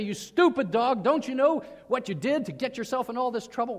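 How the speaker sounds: play-acted, furious, raging, angry shout. Showing someone coming at a dog caught in a trap: angry shouting. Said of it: "you're shouting at him".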